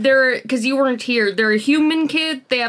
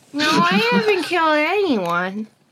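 put-on high, pitched-up small child voice; 5 semitones higher than usual. Playing Kira in a scene, answering another character in a child voice. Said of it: "my child voice is pretty good".

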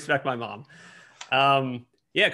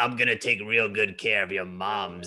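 low, tough put-on biker voice; 4 semitones lower than usual. Describing a man who always smokes a cigar, the speaker quotes him in a biker voice. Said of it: "I gave him this like biker voice".

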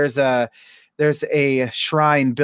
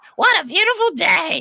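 awful, horrible toad voice, very high. A father doing the voices while reading to his son, in a horrible toad voice. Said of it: "that horrible voice".

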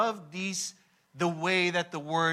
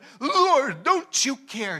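mock fed-up, high, loud furious outburst; 9 semitones higher, 6 dB louder than usual. Retelling Martha's complaint to the Lord: imitating furious Martha. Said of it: "someone is so furious that".

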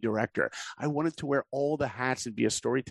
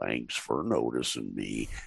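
put-on cartoon donkey voice, much lower; 13 semitones lower than usual. Recalling doing all the Winnie the Pooh voices, now doing the Eeyore voice. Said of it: "and Eeyore".

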